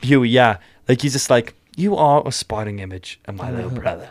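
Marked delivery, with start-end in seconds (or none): 1.8-4.1 put-on British accent. Quoting a show character's line: Butcher's accent. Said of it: "I'm in love with that accent".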